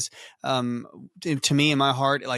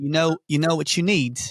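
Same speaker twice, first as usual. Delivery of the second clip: bad put-on English accent, higher and louder; 3 semitones higher, 4 dB louder than usual. Retelling what a friend from England said about loafers: imitating an English friend. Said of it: "he talks a bit like this".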